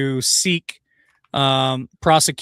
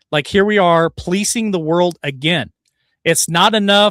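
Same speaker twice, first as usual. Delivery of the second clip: plain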